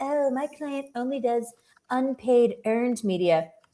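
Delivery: obnoxious, dumb-sounding voice. Imitating pr people pitching their client: imitating obnoxious pr people. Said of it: "you sound so obnoxious and dumb when you say that".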